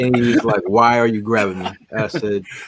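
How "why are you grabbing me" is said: normal talking voice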